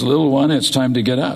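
plain

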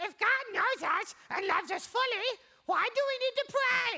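very high, loud character voice. Speaker voices the audience's imagined question in an Elmo voice. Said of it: "In that Elmo voice you like to use".

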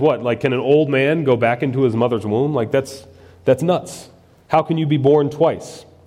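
ordinary talk

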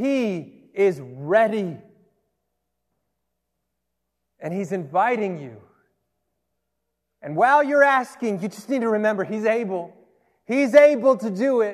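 carried away, fired-up, building preaching fervor. Preaching to listeners and getting a little worked up. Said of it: "I need to calm down".

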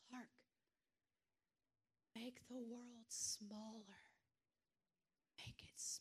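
very quiet, hushed whisper. Retelling a scene of Clark Kent's mom helping him focus, imitating a very quiet voice. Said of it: "his mom gets really quiet".

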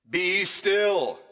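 loud, high, commanding tone. Repeating the command, the speaker demonstrates the voice he uses with his sons. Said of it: "This is the same voice that I have to use with my sons".

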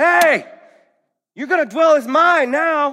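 tough, very high-pitched forceful delivery. Voicing a husband's line the way it first sounded when read: tough Samuel L. Jackson voice. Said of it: "A little Samuel L. Jackson in there".

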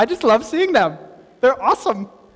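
sarcastic, ironic enthusiasm meaning the opposite. Talking about derogatory election ads: sarcastic. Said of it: "That's sarcasm".

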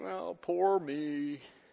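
low, soft, mopey voice. Speaker describes the discouraged, poor-me mentality: not-good Eeyore imitation. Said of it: "That was not a good imitation of Eeyore".

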